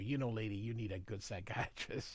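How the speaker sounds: mumbled aside. Recounting a scene, the speaker voices the colonel's reply to the lady: mumbling. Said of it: "he kind of uh, mumbles here".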